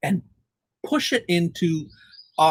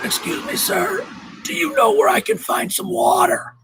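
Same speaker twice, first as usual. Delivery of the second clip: very high, feeble, weakest of tones. Retelling a moment at the mall, the speaker imitates an older man's weak voice. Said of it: "says to me in the weakest of tones".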